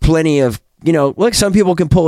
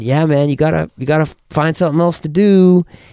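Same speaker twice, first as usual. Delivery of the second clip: ordinary talk, nothing marked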